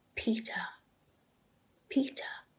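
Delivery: hushed, searching, whispered calling voice. Narrator breaks down and calls his name: hushed voice. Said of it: "say his name in a hushed voice".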